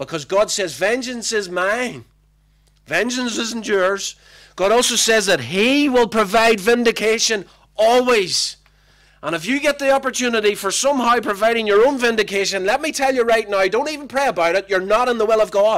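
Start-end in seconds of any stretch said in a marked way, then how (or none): 4.5-15.8 loud shouting in a preaching style. A preacher addressing the congregation and pastor in a morning sermon, shouting. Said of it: "I'm shouting this morning".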